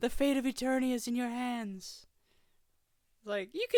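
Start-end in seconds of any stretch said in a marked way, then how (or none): 0.0-2.1 put-on dramatic, intense sorceress voice. Showing how the sorceress line should sound: dramatic sorceress voice. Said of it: "I would've put a little more into the voice".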